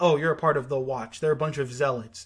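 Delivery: ordinary delivery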